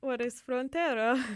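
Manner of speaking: loud put-on Italian accent. Host before ending the show, introducing frontera, in an italian accent. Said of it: "why am I saying this in an Italian accent?".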